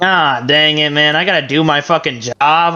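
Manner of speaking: acted laziness, mock-lazy grumbling. Acting out a guy walking down to the house kicking rocks, acting lazy. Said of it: "He's just like really lazy about it".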